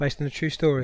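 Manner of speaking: ordinary talk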